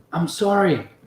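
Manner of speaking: half-whispered, high and soft. Narrating a scene and voicing her line as she darts out: half-whispering. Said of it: "you hear her whisper".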